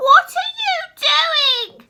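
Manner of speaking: put-on very high, loud, piercing, shrill old woman voice. Narrator reading Grandma calling to George from the next room, shrill voice. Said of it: "came the shrill voice".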